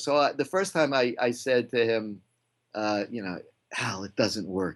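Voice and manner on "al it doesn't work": put-on whisper, lower pitch. Retelling telling someone after a screening it doesn't work: retelling own whisper. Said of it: "and I whisper that".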